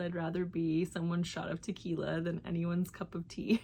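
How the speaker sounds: plain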